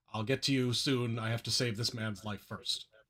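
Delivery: even, steady, calm, measured voice. Giving first medical attention to one man, telling complaining others, calmly.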